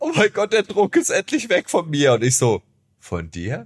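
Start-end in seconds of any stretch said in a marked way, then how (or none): 0.0-2.1 acted-out, very high, tearful, blubbering crying wail. Quoting a husband who came into the dressing room, imitating him crying. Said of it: "mein Mann heulend in meine Garderobe und meinte so".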